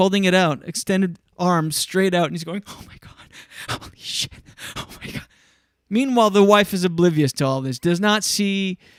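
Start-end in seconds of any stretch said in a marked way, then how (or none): 2.7-5.3 acted, breathy, whispered, stunned freak-out. Retelling a camera person filming in a kitchen: imitating someone freaking out. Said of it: "freaking out".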